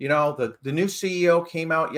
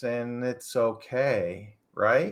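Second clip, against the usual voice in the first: mock monotone voice, much lower pitch; 5 semitones lower, 4 dB quieter than usual. Show how a man who throws out minor hot takes talks: imitating a monotone talker. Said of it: "He just talks like this".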